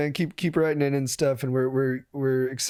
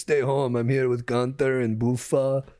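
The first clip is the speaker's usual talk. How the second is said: put-on Austrian accent voice. Retelling a celebrity's stay-home video: imitating Arnold. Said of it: "and he's like".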